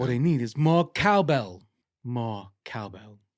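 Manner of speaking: booming, slow, drawn-out, big delivery. Doing a Christopher Walken impression for friends: Christopher Walken impression. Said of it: "Christopher Walken".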